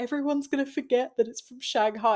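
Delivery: indignant angry griping. Retelling Tash's reaction to the Tron attraction in Magic Kingdom, imitating Tash's angry complaint. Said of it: "She's so angry about it".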